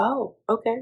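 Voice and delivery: soft, meek voice.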